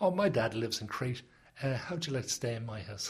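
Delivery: ordinary talk, nothing marked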